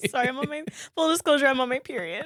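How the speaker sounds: talking through tears. Podcaster apologizing to a co-host mid-conversation, crying while talking. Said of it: "stop crying".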